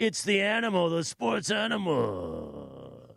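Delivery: very slow, gravelly, drawn-out big announcer voice. Recalling old sports radio station names, done in the big voice guy delivery. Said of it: "the big voice guy".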